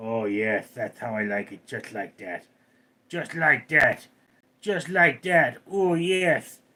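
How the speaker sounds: slow, drawn-out cat voice. Combing the cat and voicing its reply: voicing Ghost the cat. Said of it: "You're going".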